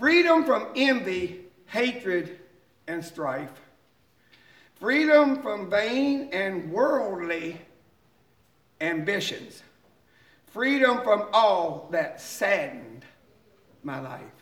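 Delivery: slow drawn-out reading, every word stressed. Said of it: "I'm just gonna read them slowly".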